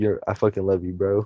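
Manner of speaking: put-on breaking, cracking voice. Retelling what he told his friends that night, imitating his voice cracking. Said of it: "while I was saying that my voice was cracking".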